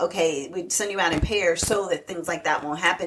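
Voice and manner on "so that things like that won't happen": ordinary talk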